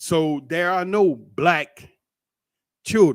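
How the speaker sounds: slow, emphatic, each word stressed deliberately. Speaker explains a questionnaire's wording to listeners, in a slow, emphatic delivery. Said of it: "I'm going slow and I'm emphasizing it".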